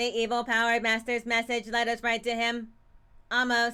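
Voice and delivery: flat, monotone robotic voice.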